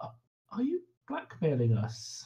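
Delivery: hushed, knowing whisper. Confronting a character in a game about blackmail: whispering. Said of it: "sort of whisper to him".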